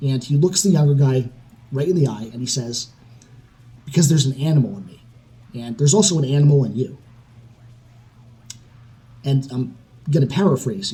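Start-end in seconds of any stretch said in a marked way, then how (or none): none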